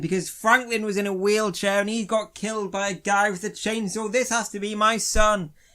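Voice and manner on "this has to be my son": put-on loud, furious weeping, tears and rage. Retelling a story, the speaker acts out a father finding his son's skeleton, mock angry crying. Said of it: "He's like angry crying".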